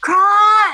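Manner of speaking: very high, loud, drawn-out whisper-yell. Calling for a lost companion in the woods: whisper-yell. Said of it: "whisper yell".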